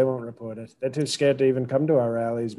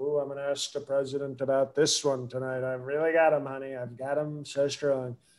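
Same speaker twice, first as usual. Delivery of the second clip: scornful, derisive mocking put-on voice; 5 dB quieter than usual. Mocking the interviewer by imitating him after reading the news: mocking imitation of the interviewer. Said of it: "you read it and you're like".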